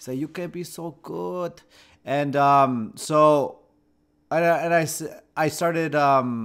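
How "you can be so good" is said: put-on Brazilian accent, higher and quieter. Retelling what a Brazilian coach told them: imitating a Brazilian accent. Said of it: "he was Brazilian, so he had an accent".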